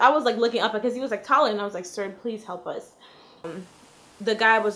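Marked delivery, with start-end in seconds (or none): 1.8-2.9 very soft, barely audible, pleading whisper. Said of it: "I whispered to him".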